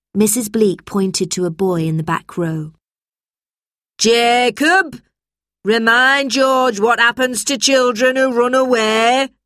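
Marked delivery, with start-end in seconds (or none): 4.0-9.3 booming, high-pitched yell. Mrs. bleak, to a boy in the back row of her class, bellowing. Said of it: "she bellowed".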